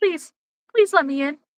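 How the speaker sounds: put-on, begging, pleading dog voice. Voicing the dog begging to be let in: put-on pleading dog voice. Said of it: "He's like".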